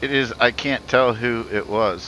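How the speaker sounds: normal talking voice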